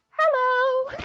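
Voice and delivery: put-on very high-pitched, highly feminine girly voice. Describing a planned bit in a game, the speaker demonstrates: most feminine voice. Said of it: "And like the most feminine voice".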